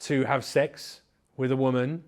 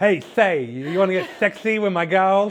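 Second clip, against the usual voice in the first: lisping, pitched up and loud; 6 semitones higher, 8 dB louder than usual. Speaker introduces his own character during the episode, in the Lispy Pimp voice. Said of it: "the Lispy Pimp".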